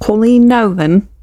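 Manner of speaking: put-on British accent. Announcing this week's guest's name, in a put-on British accent. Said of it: "Does sound like I'm from the U K".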